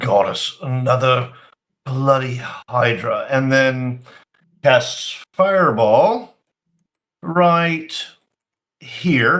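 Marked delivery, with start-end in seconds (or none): 0.0-3.3 low, grumbling mutter under the breath. Voicing a character moving in on a hydra: muttering under his breath. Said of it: "you hear him mutter under his breath".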